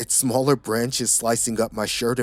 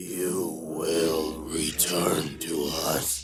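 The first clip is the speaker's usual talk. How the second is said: many warped voices shrieking together, deep, demonic; 6 semitones lower, 5 dB quieter than usual. Reading a story, a corpse shrieks at the narrator: deep, distorted, overlapping shriek. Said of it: "His voice sounded like thousands of deep, distorted voices overlapping".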